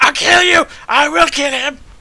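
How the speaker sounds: high-pitched, loud screaming.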